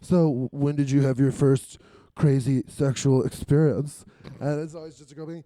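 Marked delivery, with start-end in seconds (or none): 0.1-4.0 mock creepy voice with heavy breathing. Retelling magazine interviews with porn stars: imitating a creepy heavy-breathing interviewer. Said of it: "you can hear the heavy breathing in the print".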